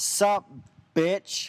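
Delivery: casual, called-out delivery. Retelling a driver yelling out his window: imitating someone yelling. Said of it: "he yells out of his window".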